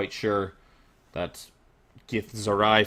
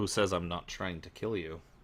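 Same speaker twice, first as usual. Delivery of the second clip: dark, sinister, menacing voice; 8 dB quieter than usual. Voicing a character who leans in toward the party: glowering menace. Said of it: "glowers at you and says".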